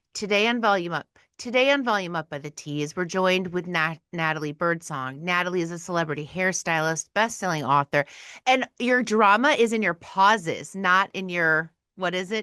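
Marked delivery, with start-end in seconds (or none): 0.1-8.0 dry, flat, low droll monotone, no inflection. Demonstrating a podcast intro for Volume Up, in a droll monotone. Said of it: "droll monotone".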